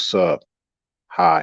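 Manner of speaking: mock lifeless, flat, dull monotone. Acting out how she might greet you, in a put-on dull tone. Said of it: "If she talks to you all dull like that".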